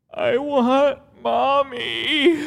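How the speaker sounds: put-on high, slow crying child voice.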